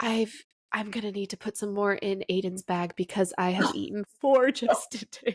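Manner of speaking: whispered voice. Retelling how an aunt leaned over to whisper: imitating Aunt Jana whispering. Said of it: "leaning over and whispering to you".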